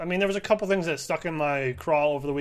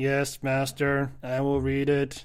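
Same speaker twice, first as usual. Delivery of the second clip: flat, slow, obedient robot voice; 3 semitones lower than usual. Answering a command to read the line as a robot: robot voice. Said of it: "Read the line, Robot [name]".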